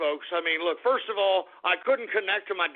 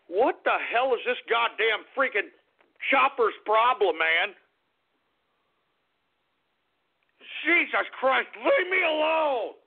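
very upset, agitated, higher pitch; 5 semitones higher than usual. Complaining about a chopper flying over the house: very upset. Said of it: "I'm very upset about what the hell's going on here".

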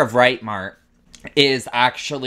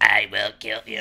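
put-on demonic voice; 3 dB quieter than usual. Retelling a scary message heard in a headset: imitating a demon voice. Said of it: "Patrick's voice just went, like, total demon".

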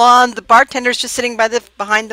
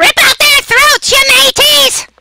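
very high, shrill, shrieking parrot cry; 5 dB louder than usual. Narrator voices the parrot in the rafters calling to the crew: screaming parrot voice. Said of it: "the parrot in the rafters screams".

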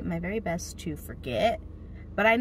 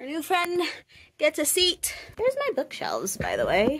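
puffing, winded, pitched-up talk; 9 semitones higher, 3 dB louder than usual. Just up the stairs, welcoming a new friend in, out of breath. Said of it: "I'm out of breath from the stairs".

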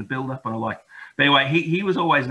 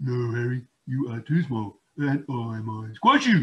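rough, surly, grumpy, gruff grumble. Reading a children's story aloud, the narrator voices Billy replying to the hedgehog: grumpy Billy the Badger voice. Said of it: "replied Billy in a grumpy voice".

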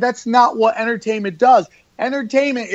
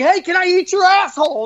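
mock brash yelling, pitched up; 10 semitones higher than usual. Retelling a show after being asked to get dirtier, the speaker re-enacts yelling at the crowd. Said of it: "I'm just jumping on stage like yelling".

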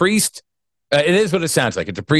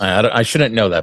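plain

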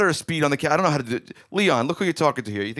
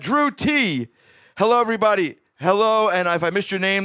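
winded, breathless, short of breath, pitched up; 6 semitones higher, 3 dB louder than usual. A live show host greets viewers by name, out of breath. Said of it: "it's because I'm out of breath".

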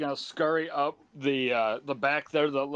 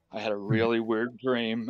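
lowered voice, much lower pitch; 5 semitones lower than usual. Telling a weird dream privately, just to the group, in a lowered voice. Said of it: "I'm going to lower my voice".

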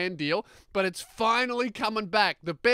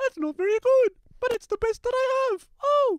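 squeaky, very high put-on voice, clumsily pitched up; 3 dB louder than usual. Imitating a guest afraid of a warehouse visit: Jordan Peterson impression. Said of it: "that's my Jordan Peterson impression".

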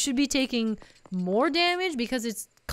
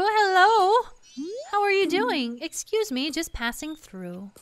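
put-on little old granny voice; 6 semitones higher than usual. Voicing a little granny passing through North Clock Town, in a granny voice. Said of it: "I must break out the granny voice".

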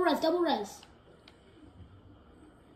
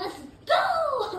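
high, cracking yell. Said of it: "What was that voice crack?".

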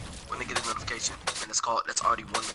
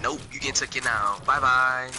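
usual speaking voice

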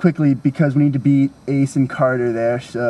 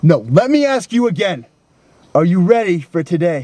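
high-pitched, demanding, pressing yell; 5 semitones higher than usual. Speaking to Edmund, whom he calls soldier: yelling. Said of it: "I'll tell you why I'm yelling at you".

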